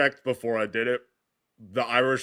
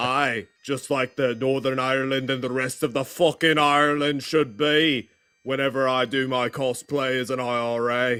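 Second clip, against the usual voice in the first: laid-on fake Scottish accent; 2 semitones higher than usual. Speaker doing a cosplay bit talking man to man: put-on scottish accent. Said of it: "doing a Scottish accent instead".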